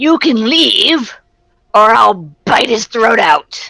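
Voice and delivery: high, shrieking, screeching ghoul monster voice. Narrating a scene, the speaker voices a ghoul holding up a prisoner's arm: screeching ghoul voice. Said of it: "he screeches out".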